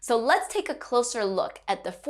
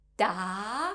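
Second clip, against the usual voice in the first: pitch climbs through Da, questioning rising tune; 2 semitones lower, 4 dB quieter than usual. Showing a learner how a mandarin tone sounds: rising tone on da. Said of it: "similar to when we say "what"".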